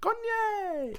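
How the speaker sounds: very high, stretched, drawn-out non-American foreign accent. Imitating people abroad greeting an american star, in a non-american accent. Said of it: "a fucking non-American accent".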